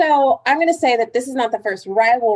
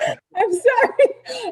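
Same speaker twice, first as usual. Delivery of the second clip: high, laughing voice. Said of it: "I'm laughing so hard".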